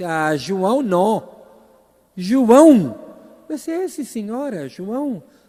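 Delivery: put-on loud, high Spanish-accented Portuguese, drawn-out vowels. Retelling the Mother Superior reading the court letter, Spanish-accented Portuguese. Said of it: "falava um portunhol".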